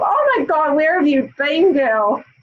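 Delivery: mild put-on reproachful, scolding undertone. Retelling a greeting: imitating a scolding undertone. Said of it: "a little kind of undertone there of".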